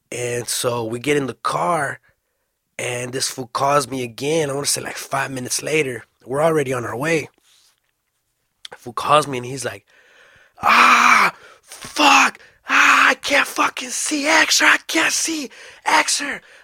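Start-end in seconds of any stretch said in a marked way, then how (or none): 10.6-16.3 mock scream, very high, very slow, loud, drawn out. Retelling a frantic phone call from the caller, imitating someone screaming. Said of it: "this was fucking screaming".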